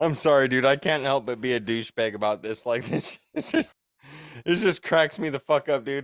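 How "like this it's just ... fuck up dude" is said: words breaking up in laughter while talking. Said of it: "this is why I'm laughing".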